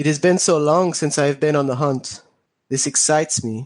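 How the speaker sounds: put-on eager delivery, English with a French accent. Describing a character called Manny, quoting him in Manny's French accent. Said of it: "It's a it's a French accent".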